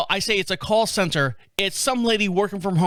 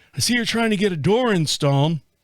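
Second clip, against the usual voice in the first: put-on elderly, older gentleman's voice. Retelling a phone call from Tom from Lowe's: imitating Tom, an older gentleman. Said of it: "That's why I'm talking like that".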